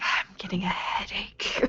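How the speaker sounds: slow, whispered grumble under the breath. Showing how the line sounds in character: whispering under breath. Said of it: "whisper under my breath".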